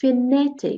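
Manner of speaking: fanatic, stress on na. English vocabulary lesson, repeating the word: stress on second syllable of fanatic. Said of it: "I raise my voice on the second part".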